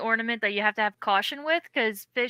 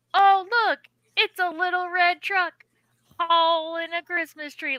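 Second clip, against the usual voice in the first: broad, super thick put-on Southern accent, pitched up; 7 semitones higher, 4 dB louder than usual. Retelling what a girl at Target said in a trend, in a super thick Southern accent. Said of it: "like super thick Southern accent".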